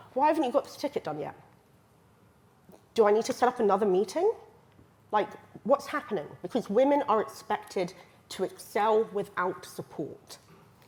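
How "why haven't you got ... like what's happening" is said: pushy, impatient, blaming and accusing tone. Acting out how a manager questions a woman at standup: imitating an impatient accusing manager. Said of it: "there's a different tone of voice".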